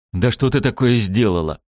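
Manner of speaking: plain reading voice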